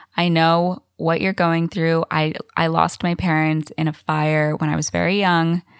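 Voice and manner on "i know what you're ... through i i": usual speaking voice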